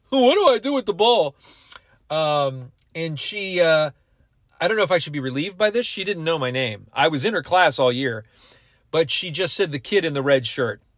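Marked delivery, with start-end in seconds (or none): 0.1-1.3 dopey, goofy, pitched-up put-on idiot voice. Quoting what she said to him in her class, in a goofy idiot voice. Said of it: "she put on kind of a goofy voice like you do when you imitate an idiot".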